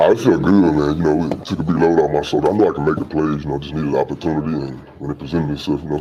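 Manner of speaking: very deep put-on voice. Trying out a voice for a character's line, in an extremely deep voice. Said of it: "That's like James Earl Jones".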